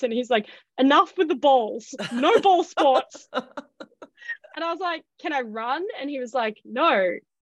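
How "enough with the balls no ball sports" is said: put-on thick, laid-on German accent. Quoting a man who had a very thick accent, the speaker uses a thick German accent. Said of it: "he had a very thick accent".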